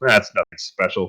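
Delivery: muttered under the breath, aside. Voicing a character commenting on another character's claim: muttering under his breath. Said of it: "Real mutters under his breath".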